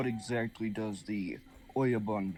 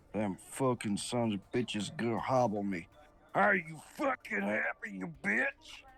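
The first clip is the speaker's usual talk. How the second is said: muttered aside under the breath, grumbling; 4 semitones higher than usual. Narrator voicing a mook about to be hobbled, speaking to her, muttering under his breath. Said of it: "he's gonna mutter under his, under his breath".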